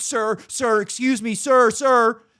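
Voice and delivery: put-on very high, insistent, loud yelling. Retelling a woman still yelling after the speaker at the desk: imitating someone yelling. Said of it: "She's still yelling at the back of my head".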